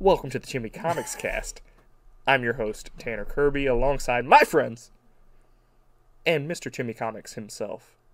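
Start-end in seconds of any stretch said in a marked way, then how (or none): none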